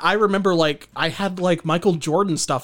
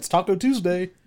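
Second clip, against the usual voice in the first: put-on dorky dad voice. Describing someone as a dorky dad next door: put-on dorky dad voice. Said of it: "he's like a, a dorky dad of".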